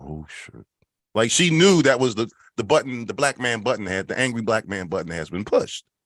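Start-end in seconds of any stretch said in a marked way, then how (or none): 0.0-0.7 very hushed whisper under the breath. Retelling how a helper reacted to the shouting: imitating a whisper. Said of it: "whispers to herself".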